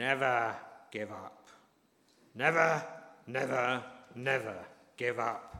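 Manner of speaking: slow, gravelly oration with each word dragged out. Retelling a prize-giving day speech to assembled pupils and parents, in a gravelly Winston Churchill voice. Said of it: "in his inimitable gravelly voice".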